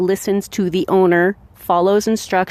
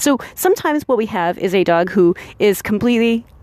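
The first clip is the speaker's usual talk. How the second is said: ordinary delivery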